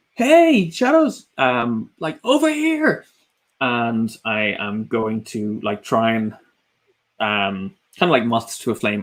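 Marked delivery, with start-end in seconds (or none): 0.2-3.1 very high, swooping, taunting, attention-grabbing shout. Player's character yelling at the shadows to buy his ally time, yelling at the shadows. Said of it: "I'm gonna again kind of yell at the shadows".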